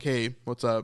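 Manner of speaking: mimicked flat low voice. Commentator reviewing a clip mimics how a man greets others, imitating Thomas's low monotone. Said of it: "It's very monotone".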